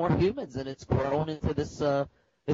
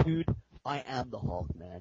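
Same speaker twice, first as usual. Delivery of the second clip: put-on very serious tone, lower and quieter; 4 semitones lower, 7 dB quieter than usual. Retelling how Peter answered a question about the Hulk: imitating Peter, super serious. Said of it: "super serious".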